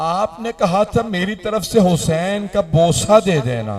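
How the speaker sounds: high, loud, grieving wailing lament.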